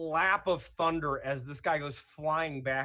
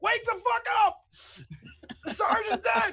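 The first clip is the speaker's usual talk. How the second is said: frantic, panicked shouting at very high pitch; 5 dB louder than usual. Voicing guards holding up their mates: guards shouting in panic. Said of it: "just being like".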